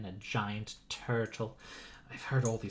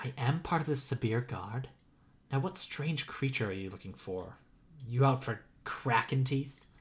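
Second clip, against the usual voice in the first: theatrical stage whisper. Retelling what a woman said in hushed tones: stage whisper. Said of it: "I'm going to do a stage whisper".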